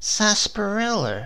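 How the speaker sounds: wary sniff at the word. A wife questions her excited husband about a smell, sniffing suspiciously. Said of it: "she sniffed suspiciously".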